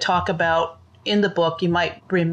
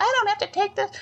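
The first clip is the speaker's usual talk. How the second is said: put-on tiny, very high five-year-old child voice; 14 semitones higher than usual. Retelling what a young boy said after storming off the field, little five-year-old voice. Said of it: "he said in his little 5-year-old voice".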